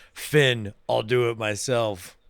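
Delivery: low, very slow voice, every word dragged out. Describing a made-up post-credits scene with an orca: Thanos voice. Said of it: "He's doing, uh, Thanos".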